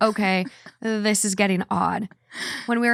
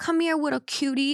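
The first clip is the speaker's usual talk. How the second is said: put-on baby voice, much higher; 5 semitones higher, 3 dB quieter than usual. Recalling a guy from high school who talked in a baby voice, imitating his baby voice. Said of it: "That was like really baby voice".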